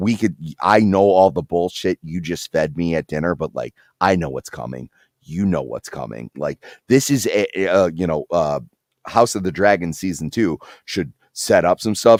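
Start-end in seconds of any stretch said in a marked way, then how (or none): 0.0-6.3 acted whisper, lower. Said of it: "She's whispering into his ear".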